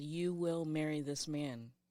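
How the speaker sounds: mock firm commanding voice. Recounting a voice she heard speaking behind her, retelling an assertive voice. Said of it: "And in a more assertive".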